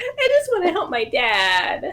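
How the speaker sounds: put-on, very high, pleading child's voice. Voicing a child character performing for a cultist: child performing to deceive. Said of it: "do a little bit of a performance on this one".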